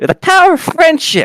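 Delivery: put-on very high, loud, squeaky girlish voice. Describing a raging character's magic: high-pitched girl's voice. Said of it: "a high-pitched girl's voice say".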